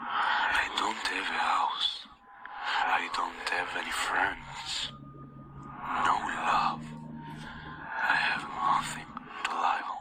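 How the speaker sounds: processed, distorted voice-changer voice with heavy echo. A voicemail left from the number, in an echoing voice-changer voice. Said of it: "It sound do it sound just like this with the echo".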